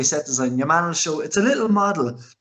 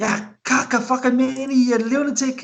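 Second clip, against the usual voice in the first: play-acted, very high, stretched-out shriek; 9 semitones higher than usual. Retelling a film scene on the road: imitating her screaming at a guy. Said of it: "she starts screaming at your fucking guy".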